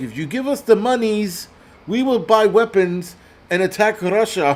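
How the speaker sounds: desperate, pleading, high put-on Ukrainian accent. Retelling a foreign president's plea for money: imitating a Ukrainian accent. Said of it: "And his Ukrainian accent, and he's like".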